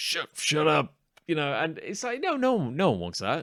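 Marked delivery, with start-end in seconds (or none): 0.0-0.9 angry, short-tempered voice. Speaker acts out a father snapping at his child, terrible father impression. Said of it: "best impression of a terrible father?".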